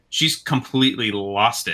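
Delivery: plain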